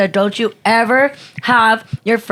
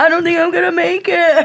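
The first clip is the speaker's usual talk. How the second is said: fake tearful sobbing in a high voice; 8 semitones higher than usual. Retelling how the ex said it while fake crying: imitating someone fake crying. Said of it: "fake crying".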